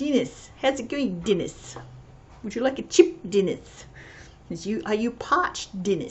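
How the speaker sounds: exaggerated, ridiculous New Zealand accent. Quoting what he said to dennis the delivery guy, in a new zealand accent. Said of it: "I'll try and do a New Zealand accent again".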